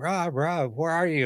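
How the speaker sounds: play-acted, slow, drawn-out calling out across a distance. Retelling how his coworker yelled his name at 3 a.m.; retelling a coworker's yell. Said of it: "he's like yelling my name".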